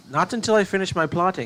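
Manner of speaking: put-on British accent. Retelling his reply when she called him to bed, in a British accent. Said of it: "stop doing the British accent".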